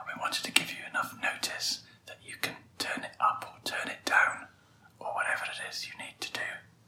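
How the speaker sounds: hushed whisper. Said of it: "We're whispering".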